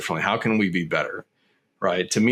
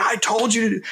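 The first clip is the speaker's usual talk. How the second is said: acted, very high, raised yelling voice; 13 semitones higher than usual. Explaining how kids get conditioned, imitating a parent finally yelling at them. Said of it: "finally they raise their voice".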